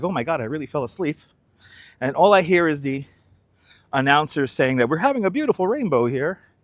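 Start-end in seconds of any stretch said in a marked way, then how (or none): 0.0-1.2 panicked tone, quieter. Retelling waking up after falling asleep during the game: retelling own panicked words. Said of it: "I wake up a little in a panic".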